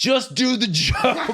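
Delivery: mock, very high, very slow, drawn-out scream. Recounting yelling at her on stage, retelling a scream. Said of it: "I'm fucking screaming at her on stage".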